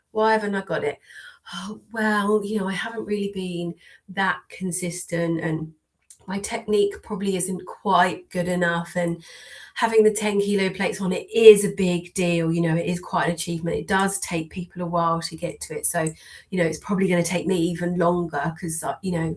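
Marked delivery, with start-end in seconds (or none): none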